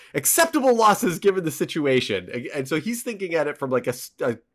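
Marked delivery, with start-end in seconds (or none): 0.1-2.3 raised, high yell. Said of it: "yelling at them".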